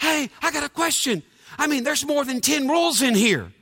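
mock fired-up half-shout. Retelling his father's question on the phone, imitating dad yelling. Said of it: "My dad's like yelling in the phone".

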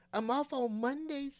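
cheerful, bright, pitched well up. Billie Jean replies to Jimmy, who wants to visit a barbecue place; cheerful. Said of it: "said Billie Jean cheerfully".

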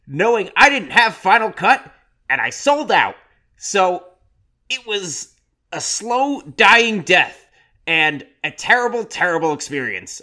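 very high, earnest, nerdy voice. Speaking as David Lynch about not having Final Cut on Dune, in a David Lynch impression. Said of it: "that sounded like David Lynch".

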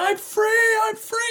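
very high mock scream at the top of the lungs. Retelling a moment driving alone after crying: retelling a scream. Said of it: "I'm beating on my dash going".

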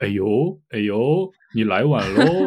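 Taiwanese Mandarin accent and intonation. Comparing mainland and Taiwanese speech, demonstrating a Taiwanese accent. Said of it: "但是台湾人会说".

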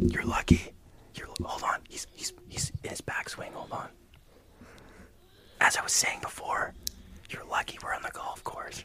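quiet whispering. On a golf course, whispering to another player during his backswing, quiet whispering. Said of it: "They whisper quiet to each other".

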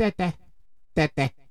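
put-on babbling infant-like baby voice. Speaker talking about fathers as examples, doing a baby voice impression. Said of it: "That's my baby impression".

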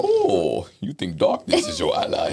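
slow, villainous put-on voice. Quoting the villain Bane after asking whether the listener likes Bane: Bane voice.

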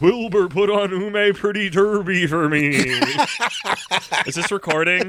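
high-pitched horse voice. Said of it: "It sounds like Mister Ed".

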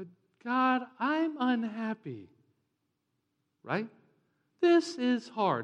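cheesy, churchy put-on voice, swooping, drawn-out.

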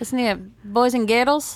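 slow, put-on Scottish accent. Answering a request to do a Scottish accent: put-on Scottish accent. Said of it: "That's the only thing I can say in Scottish".

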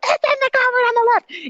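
very high shrill scream at full lungs. Recounting answering him the fifth time, the speaker is retelling a scream. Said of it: "I'm screaming at him to, at the top of my like".

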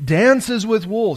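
very loud, high-pitched, echoing warrior's call. Retelling a film scene, a warrior on a cliff calling to his brother: imitating a warrior shouting farewell. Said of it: "He's shouting this".

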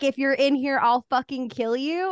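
put-on screaming, menacing. Retelling clearing the house alone with scissors: imitating her own screaming. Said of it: "was screaming".

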